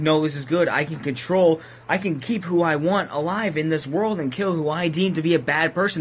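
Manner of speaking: normal talking voice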